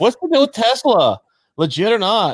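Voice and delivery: very high-pitched stand-up comic delivery. Reading a question from the agenda you were sent, put on your Jerry Seinfeld voice. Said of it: "Give my Jerry Seinfeld voice".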